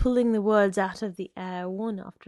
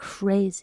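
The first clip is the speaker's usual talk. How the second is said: whispered delivery. A woman at a door answers the man outside, whispered. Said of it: "she whispered".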